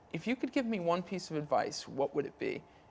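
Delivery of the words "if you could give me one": plain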